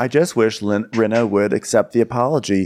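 ordinary talk, nothing marked

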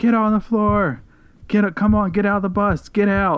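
high, screamed, forceful shouting. Retelling masked men boarding a bus with guns: imitating men screaming orders. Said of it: "they're screaming".

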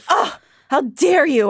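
mock-angry voice. Retelling a story, the speaker acts out a woman's reply, acting out her getting mad. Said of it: "she gets all mad".

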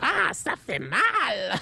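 high, swooping cartoon goblin voice, "mal" stretched out. Asked live on YouTube to do a goblin voice, doing it in French. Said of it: "Just fucking do a goblin voice".

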